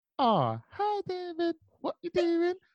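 very high, slow mock squealing voice. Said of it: "the way she spoke was like".

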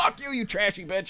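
high-pitched angry shouting. Speaker retelling an argument with a woman on the phone, retelling an angry yell. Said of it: "Now you're all yelling".

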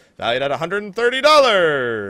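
big, loud game show announcer voice. Host announces a giveaway prize value, in a game show voice. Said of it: "Game show voice".

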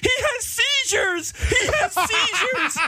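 very high, slow mock scream.

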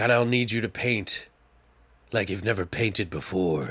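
hushed, dark, crazed gurgling haunting voice. Retelling what a character says, in a crazy dark gurgly voice. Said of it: "it's like some crazy dark gurgly voice".

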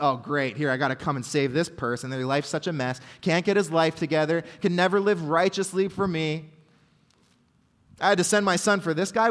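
plain

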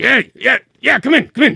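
gruff-sounding voice. Narrating a scene, voicing someone behind a door answering a knock, gruff voice. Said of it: "you hear a gruff voice from the other side of the door".

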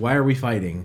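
ordinary talk, nothing marked

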